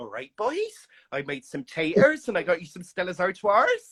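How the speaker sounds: put-on heavy, strong West Country Somerset country accent. Recalling coming home from work to a houseguest, imitating Wayne's mum's West Country accent. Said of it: "West Country Somerset accent".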